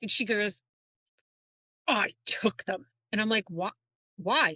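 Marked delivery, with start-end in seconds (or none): 1.9-2.9 play-acted angry voice, plainly annoyed and cross. Retelling how mom took the Q-tips, imitating angry mom. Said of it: "she was like angry".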